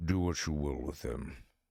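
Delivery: voice dropped way down, deep and low. Holding a captive on the ground, nodding everyone over: deep voice. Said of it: "my deep ass voice".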